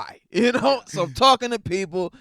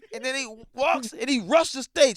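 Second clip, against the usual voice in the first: plain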